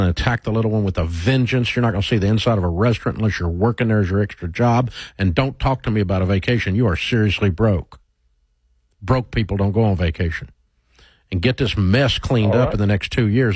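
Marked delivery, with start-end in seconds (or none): none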